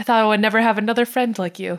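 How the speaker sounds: normal talking voice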